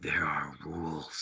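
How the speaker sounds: deep, room-shaking, subwoofer-like rumble. Retelling what a horned shadow at the bed said: imitating a low room-shaking voice. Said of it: "said in this low voice".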